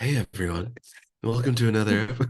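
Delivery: mock-gentle, soft, put-on voice. Co-host mimicking how the host opened the episode, in a mock-gentle soft voice. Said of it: "that was like a real gentle".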